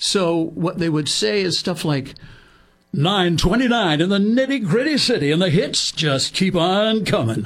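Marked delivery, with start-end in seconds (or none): 2.9-7.5 put-on excited radio DJ delivery, higher. Explaining how old disc jockeys had to sound: imitating an excited radio DJ. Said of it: "the disc jockeys that they had to sound exciting".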